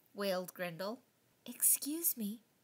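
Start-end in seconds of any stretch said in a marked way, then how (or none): 1.4-2.3 quieter whisper. A little voice speaks up to Grendel, who has no tree lights; whispered. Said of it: "whispered a little voice".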